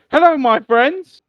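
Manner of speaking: very high, very loud hand-puppet voice. Voicing a talking hand that greets the group: talking like a hand puppet. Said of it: "that's how he begins to talk".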